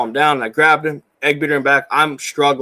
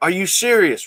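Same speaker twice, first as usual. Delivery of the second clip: put-on high-pitched, mild half-yell; 5 semitones higher than usual. Retelling yelling back at a man calling for help: imitating own loud yell. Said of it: "really loud".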